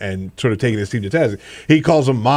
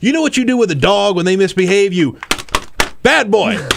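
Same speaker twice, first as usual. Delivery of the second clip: angry, pitched-up scolding yell; 8 semitones higher than usual. Retelling an angry coach's press conference rant: imitating a coach yelling. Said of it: "he's yelling and saying".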